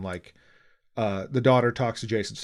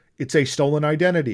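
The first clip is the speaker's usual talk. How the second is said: ordinary talk, nothing marked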